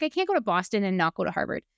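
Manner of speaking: normal talking voice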